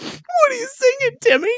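put-on very high voice, laughing through it. Speaker retells his mom on the couch asking him, imitating mom laughing while asking.

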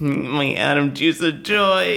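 put-on nerdy, dorky voice. Joking about a nerd getting laid, in a nerdy Urkel voice. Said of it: "Sounds like a nerd getting laid, like".

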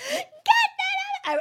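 very high-pitched, very loud screaming. Retelling yelling at their kid, who was holding a big snake, retelling a scream. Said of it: "and I'm screaming".

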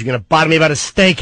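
mock argumentative, arguing tone. Speaker recalling his parents arguing over a steak, imitating father arguing. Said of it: "parents were arguing over the steak".

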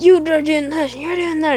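high-pitched, ranting, loud yell. Retelling how someone goes off at the group: imitating someone yelling. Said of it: "He's just yelling at us and yelling".

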